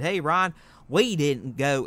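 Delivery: put-on Southern American accent. Voicing what other fans say in a put-on Southern US accent. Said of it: "I'm just putting on the southern accent".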